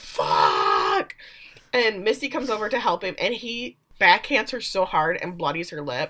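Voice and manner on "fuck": put-on scream, rasped out and kept small. Retelling a scene where a character falls over: imitating someone screaming. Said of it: "falls over because he doesn't have a leg and screams".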